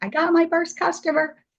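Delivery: very high, tearful, thrilled, excited burst. Speaker retells a friend's voice message to them, imitating an excited friend. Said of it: "she sent me this message and she was so excited".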